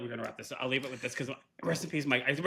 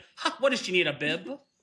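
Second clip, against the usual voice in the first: put-on heavy, thick Italian Long Island accent, high pitch; 6 semitones higher than usual. Retelling a grandmother talking out loud during a movie: imitating grandma's thick Italian Long Island accent. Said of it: "I can hear it in my head".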